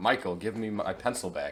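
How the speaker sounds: ordinary talk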